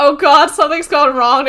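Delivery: sudden shouted cry. Retelling the last words of a man in a bullet catch: imitating someone shouting. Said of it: "he shouted".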